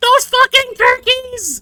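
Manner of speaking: put-on tiny kid's voice, very high and very loud. Retelling hearing a tiny voice echo his swearing, tiny little voice. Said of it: "I hear this tiny little voice".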